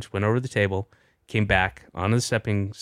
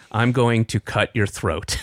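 put-on deadpan, serious tone. Retelling a child's threat while staring at the speaker: imitating a serious threat.

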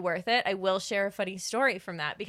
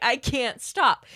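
acted-out helpless, uncontrollable laughing fit; 4 semitones higher, 5 dB louder than usual. Retelling how he started laughing uncontrollably, imitating uncontrollable laughter. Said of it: "like uncontrollably laughing".

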